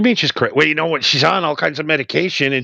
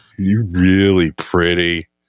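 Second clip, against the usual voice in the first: very low, creepy, dead-level drone; 10 semitones lower than usual. Showing how you say it, the most monotone, creepy way possible: monotone, creepy delivery. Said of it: "you say it in like the most monotone, creepy way possible".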